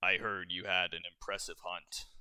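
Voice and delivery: very deep, low bass register voice. Voicing a man who greets the players at their table after a hunt, very deep voice. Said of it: "he says in a very deep voice".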